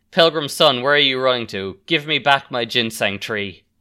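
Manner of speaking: usual speaking voice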